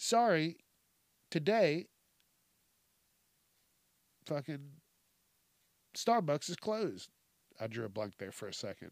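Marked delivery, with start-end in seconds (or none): 0.0-7.1 put-on mechanical, robot-style delivery. Retelling how a girl turned away Starbucks customers: imitating a robotic voice. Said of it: "she said that she used a robotic voice".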